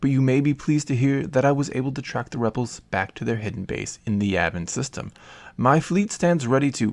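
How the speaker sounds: ordinary delivery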